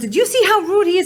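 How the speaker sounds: high-pitched, loud, indignant voice.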